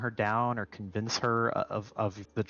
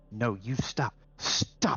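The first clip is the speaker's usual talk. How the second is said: desperate, begging, pleading tone. Voicing a character shaking her head, accusing someone of lying: desperate. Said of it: "in that sort of v-, desperate".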